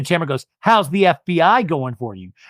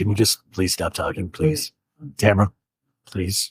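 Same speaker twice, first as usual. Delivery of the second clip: very calm, peaceful, zen delivery; 8 semitones lower, 4 dB quieter than usual. Retelling how Eddie asked Tamara to stop talking: imitating a calm zen voice. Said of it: "very zen".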